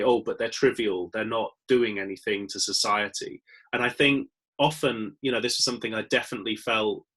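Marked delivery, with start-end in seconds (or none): none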